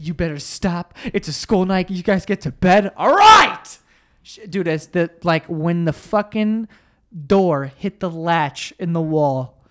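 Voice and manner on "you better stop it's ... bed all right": put-on swooping, sing-song scolding tone. Retelling how mom came in at night, imitating mom scolding. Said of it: "she's like".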